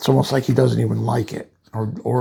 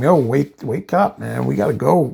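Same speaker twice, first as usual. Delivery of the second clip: pressing, mild, urgent half-shout. Retelling a story, the speaker acts out a woman screaming at a shocked man: imitating someone screaming. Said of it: "she's screaming at him".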